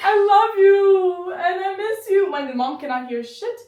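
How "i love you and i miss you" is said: mock, very loud, very slow, drawn-out sobbing wail. Retelling a child pleading for his mom at the door: imitating a crying child. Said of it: "you're crying when I'm here".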